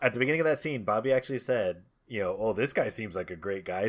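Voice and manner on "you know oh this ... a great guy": mock sarcastic delivery. Speaker recalling a line said at the start of a scene, mock-sarcastic retelling.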